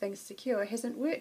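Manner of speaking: plain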